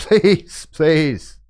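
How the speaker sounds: pathetic, whiny pleading. Asking listeners to follow on Patreon, pretending to beg in a really pathetic voice. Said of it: "in a really pathetic voice".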